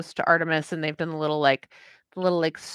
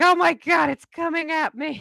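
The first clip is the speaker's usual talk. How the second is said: put-on very high, drawn-out, freaked-out panicked cat voice; 11 semitones higher, 4 dB louder than usual. Retelling how the cat reacted when the bunny charged: voicing a cat freaking out. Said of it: "Rose just completely freaks out and is like".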